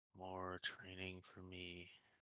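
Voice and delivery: slow, drawn-out, glum, unenthusiastic. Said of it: "don't sound too excited".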